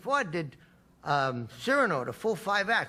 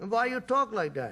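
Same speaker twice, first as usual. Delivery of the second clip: imitated Yiddish accent; 3 semitones higher than usual. Retelling what people in the Catskills asked: imitating a Yiddish accent. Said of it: "everybody spoke with a Yiddish accent".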